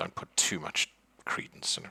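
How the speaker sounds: mumbled, low, sidelong mutter under the breath. The narrator voices a man rolling his eyes about a psychic, muttering under his breath. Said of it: "he sort of mutters under his breath".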